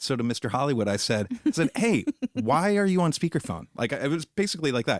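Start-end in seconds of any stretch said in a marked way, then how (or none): 1.8-3.7 mock, a little angry, sarcastic, slightly raised voice. Retelling a remark to someone on speakerphone in an aisle: imitating own sarcastic anger. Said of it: "a little anger, a little sarcasm".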